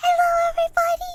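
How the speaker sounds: loud high call. Greeting everybody at the start, in a loud voice. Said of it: "Am I too loud?".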